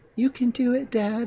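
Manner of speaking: put-on very high, tiny child voice. Recounting a game's turtle cheering on its dad: little kid turtle voice. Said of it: "like this little kid turtle voice".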